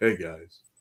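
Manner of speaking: low, sexy, friendly voice.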